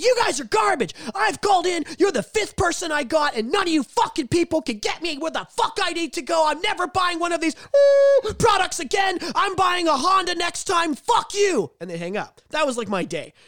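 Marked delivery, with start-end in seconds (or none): 0.0-11.7 put-on very high, shrill screaming tirade. Retelling angry customers calling in: imitating callers screaming. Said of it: "Everyone was calling in screaming".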